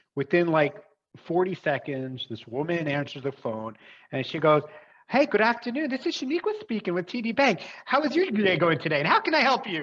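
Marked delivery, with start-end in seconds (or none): 5.1-9.7 put-on overly cheerful voice, higher pitch. Retelling a phone call where a bank agent answered: imitating a super cheery voice. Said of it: "just super cheery".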